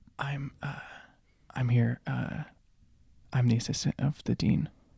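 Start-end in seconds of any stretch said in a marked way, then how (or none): 1.5-4.7 whispered line, quieter. Leaning over to a human in a cloak to whisper: whispering in character. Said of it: "lean over and whisper to this human and say".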